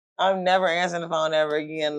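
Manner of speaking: ordinary talk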